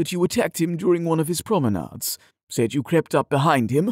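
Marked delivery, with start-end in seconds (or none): none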